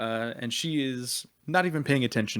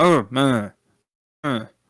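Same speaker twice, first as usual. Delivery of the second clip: very loud, muffled by a full mouth; 11 dB louder than usual. A character is asked a question right before eating, and answers talking with mouth full. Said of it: "with her mouth full".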